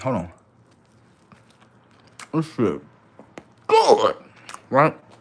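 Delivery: speaking mid-chew with a mouthful of food. Telling a story while eating, the speaker is talking with mouth full. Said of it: "I know I'm eating with my mouth full".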